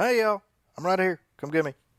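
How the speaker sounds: high, beckoning voice. Joining in after a remark about Ad Astra ads: Tommy Lee Jones voice. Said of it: "[name]'s impersonation of Tommy Lee Jones in Ad Astra".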